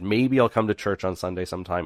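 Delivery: ordinary talk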